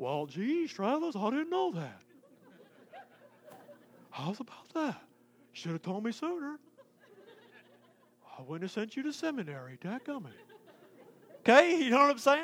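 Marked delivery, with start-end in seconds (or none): 0.0-10.3 joking put-on voice with big swooping pitch. Joking about Jesus answering a complaint about only speaking English: joking Jesus voice. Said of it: "Jesus doesn't talk like that".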